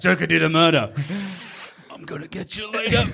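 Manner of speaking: superhero voice, spoken while holding breath. Joking about Batman threatening the Joker, acting as Batman. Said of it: "And he just has to run around holding his breath".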